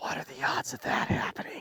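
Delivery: soft, breathy whisper under the breath. Retelling a moment in the blind, the speaker quotes what a companion whispers. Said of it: "he whispers".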